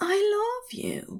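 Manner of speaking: very high, soft, loving, tender half-whisper. Aziraphale speaks to Crowley right after kissing him; half-whispering tenderly. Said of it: "he whispered tenderly".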